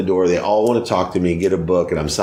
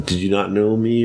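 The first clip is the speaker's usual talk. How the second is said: ordinary talk, nothing marked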